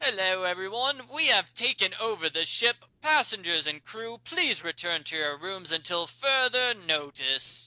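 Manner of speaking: put-on British-accented announcer voice. Voicing an announcement over the ship intercom: british accent. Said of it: "this British guy".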